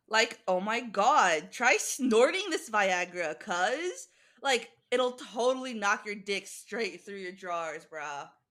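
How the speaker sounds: put-on California Valley Girl accent. Asked by the group to give their best Valley Girl, in a Valley Girl accent. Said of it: "Give us your best Valley Girl".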